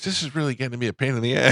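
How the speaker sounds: small, tiny, high cartoon kid voiceover voice. Telling how a boy looked at him and spoke, imitating Jake's tiny little voice. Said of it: "he's got this tiny little voice".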